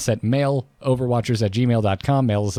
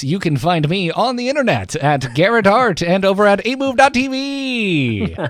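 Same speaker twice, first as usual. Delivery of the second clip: put-on very high old-timey radio announcer voice; 9 semitones higher, 4 dB louder than usual. Reading out where to find him online: old-timey radio voice. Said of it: "I'm going to do this in my old-timey radio voice".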